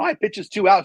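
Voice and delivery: voice cracking up high, breaking mid-phrase. Live game commentator correcting a pitch count, voice cracking. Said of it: "you hear my voice crack?".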